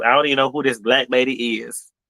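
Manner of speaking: ordinary delivery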